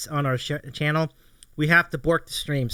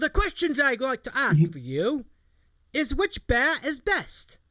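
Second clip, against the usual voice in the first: put-on British accent, pitched up; 8 semitones higher than usual. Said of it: "asked in the accent".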